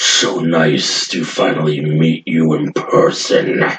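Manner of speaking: very deep, low, sinister demon voice. Narrating a scene among demons, then speaking as a deep voice. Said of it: "And then you hear a deep voice".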